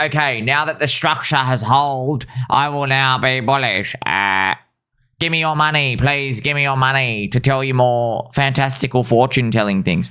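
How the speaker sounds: ridiculing, derisive voice. Mocking bearish traders who now turn bullish and want money: imitating bears turning bullish. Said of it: "they're like".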